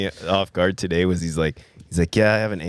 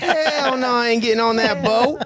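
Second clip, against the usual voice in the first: woman's voice pitched very high. Among friends, the speaker repeats the impression of a woman refusing the Titanic.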